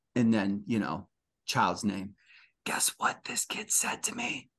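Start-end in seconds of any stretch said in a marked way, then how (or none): 2.6-4.4 hushed, soft, breathy whisper. Retelling what a child whispered into their ear: imitating a whisper. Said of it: "she whispers".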